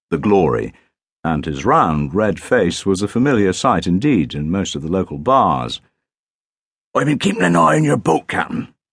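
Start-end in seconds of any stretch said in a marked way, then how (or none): 6.9-8.7 put-on very high, creaky, rough, wheezing voice. Narrator voicing a local fisherman reporting to the Captain, wheezing. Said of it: "he wheezed".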